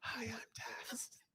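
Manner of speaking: very hushed, breathy, close-mic ASMR whisper. Teasing the other person while watching a clip of them, imitating Taz's ASMR whisper. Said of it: "You thought you was doing A S M R".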